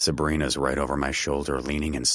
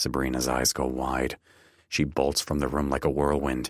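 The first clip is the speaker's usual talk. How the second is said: usual speaking voice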